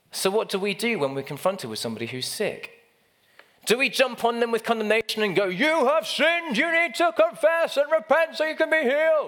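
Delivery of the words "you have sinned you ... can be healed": very high, goofy, silly put-on voice, condemning tone. Acting out condemning someone who is sick, in a funny put-on voice. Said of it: "in a funny voice like that".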